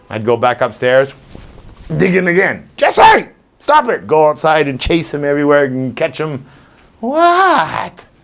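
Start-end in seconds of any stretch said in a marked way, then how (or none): 2.7-4.0 mock very high, exasperated, scolding shout. Retelling chasing the dog out of the backyard: retelling yelling at the dog. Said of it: "why I'm yelling at him".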